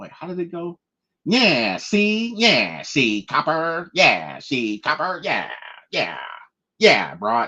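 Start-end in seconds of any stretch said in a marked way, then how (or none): 1.3-7.2 put-on slow, drawn-out, old-time forties way of talking. Trying to show how people talked in the forties, in 1940s-style talk. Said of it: "That's how they talked in the forties".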